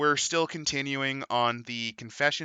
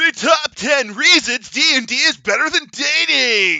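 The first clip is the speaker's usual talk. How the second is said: over-the-top, straining, very high, booming announcer voice; 11 semitones higher, 11 dB louder than usual. Reading a list title aloud from a book: over-the-top straining announcement. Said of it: "I just gave myself an hernia doing that".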